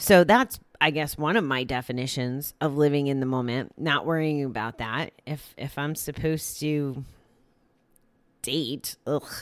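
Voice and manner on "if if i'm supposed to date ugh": soft, unexcited, reluctant, unenthusiastic delivery. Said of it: "do I sound a little not excited about that?".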